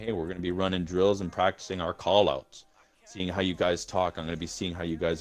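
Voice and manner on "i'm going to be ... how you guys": normal talking voice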